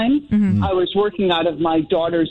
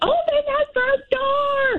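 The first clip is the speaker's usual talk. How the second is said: very high, long stretched-out yell. Parent retells throwing a mouse outside, calling to their children; retelling a scream. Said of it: "I'm screaming at my children".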